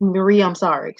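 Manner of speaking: flat, level voice with no feeling at all. Retelling a cast member's fake apology to Marie: imitating a flat, emotionless apology. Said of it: "she just said it like that with no emotion".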